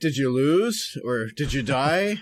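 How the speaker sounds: innocent, curious tone. Retelling a question asked during a frustrating game: imitating Terra asking innocently. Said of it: "the most innocent way, like she's curious".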